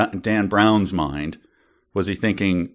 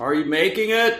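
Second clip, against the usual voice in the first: shouting, higher; 11 semitones higher than usual. Asking while wearing noise reduction headphones whether the mug is made: yelling. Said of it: "with you yelling like that".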